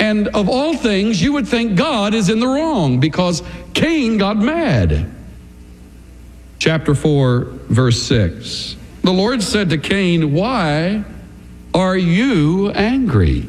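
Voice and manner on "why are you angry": stress on angry, drawn out slow and falling. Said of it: "we've often put the emphasis on the last word".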